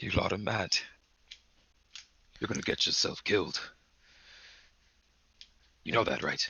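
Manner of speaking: chuckling while speaking. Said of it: "He just sort of chuckles and he goes".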